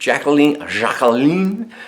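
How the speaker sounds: sultry, sexy put-on French accent. Announcing a winner's name to an audience, in a sexy French accent. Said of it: "in my sexiest French accent".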